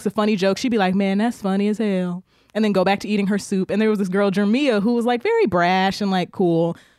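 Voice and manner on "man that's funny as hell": mock monotone delivery, slower. Describing a quiet friend at the table, imitating her monotone reaction to a joke. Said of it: "it's very monotonous".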